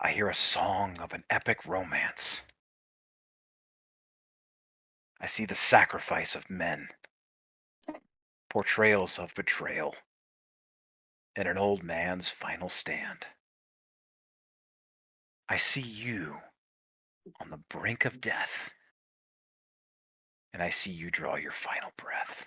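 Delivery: hushed whisper. A game narrator voices a figure standing over a dying character: whispering. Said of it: "He whispers to you".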